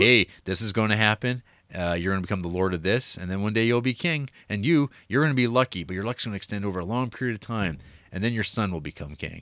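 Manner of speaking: normal talking voice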